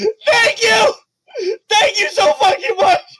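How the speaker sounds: put-on very high, tearful, sobbing crying little-boy voice. Voicing a grateful little boy character in the game, crying little boy voice. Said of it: "So he is grateful".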